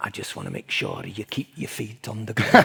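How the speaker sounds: put-on, sing-song Scottish accent. Retelling being summoned after the game: put-on scottish accent. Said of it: "sorry about the accent, if there's any Scots".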